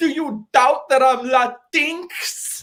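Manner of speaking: acted, very high, very slow, upset, shrill meltdown. Retelling a Twitter video, imitating a guy having a meltdown. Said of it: "this guy having a meltdown".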